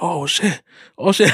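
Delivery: sudden, high-pitched, panicky outburst. Retelling getting scared as a ride started: retelling own panic. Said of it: "I'm panicking".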